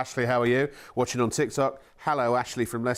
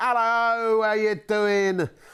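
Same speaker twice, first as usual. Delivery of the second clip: put-on assumed voice, much higher pitch; 8 semitones higher than usual. Host greets a TikTok viewer while reading out messages; put-on voice. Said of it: "I don't know why I keep doing that voice".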